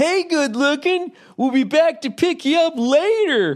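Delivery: very high-pitched, carrying, shouted yell. Retelling a man in a convertible calling to a woman: imitating someone yelling. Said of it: "he just yells at some woman".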